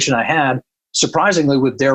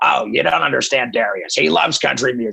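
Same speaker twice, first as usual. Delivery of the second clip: put-on gravelly, rough-textured voice. Retelling a conversation, the speaker quotes Doc's reply: imitating Doc's gravelly voice. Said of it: "he's got this real gravelly, like Danny DeVito voice".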